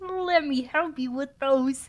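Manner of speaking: voice-acted cartoon puppet frog voice. Voicing a character in a read-aloud scene: Kermit the Frog voice. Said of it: "I'm making [name] voice act Kermit".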